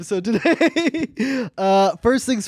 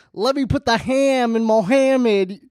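put-on Texas accent. Speakers taking turns with joke lines in Texas accents, in a Texas accent. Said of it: "We're doing Texas accents".

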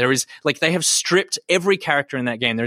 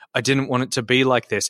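ordinary talk, nothing marked

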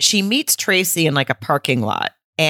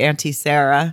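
ordinary talk

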